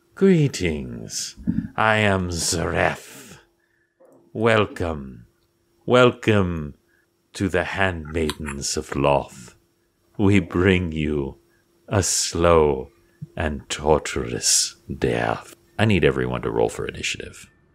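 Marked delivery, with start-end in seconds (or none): 0.2-15.6 scornful, disdainful voice of a dark demon leader. Voicing the leader of the flying handmaidens greeting the party: disdainful demon leader voice. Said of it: "the, uh, leader, you suspect, uh, says to you".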